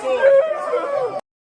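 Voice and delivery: mocking high, squeaky voice crack. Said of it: "mocking like a voice break or voice crack".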